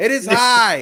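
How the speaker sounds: excited play-by-play call. Performing a home run call for the others after being asked: excited home run call. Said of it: "Hector, all right, clear the pipes".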